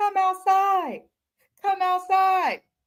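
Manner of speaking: mock shrill hollering, very high and loud. Retelling someone pulling up to a house on live: imitating Zoe hollering.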